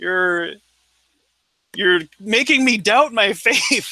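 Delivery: mock half-sobbing, high, weepy, tearful crying voice. Retelling what a person said while crying during an argument about faith. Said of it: "he was kind of crying and going".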